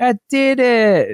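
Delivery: put-on very high, cute, adorable toddler voice. Quoting him after he undoes his sleep-sack zipper, imitating adorable toddler voice. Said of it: "in like the most adorable voice".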